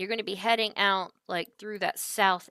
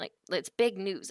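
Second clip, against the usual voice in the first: ordinary talk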